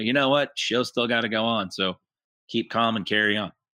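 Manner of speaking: ordinary delivery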